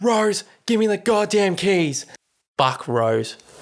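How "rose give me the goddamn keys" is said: mock, raised, pitched-up, impatient yelling. Recounting a man demanding the keys from her, retelling him yelling. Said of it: "he's like yelling at her like hurry the fuck up".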